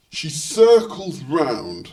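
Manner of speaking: plain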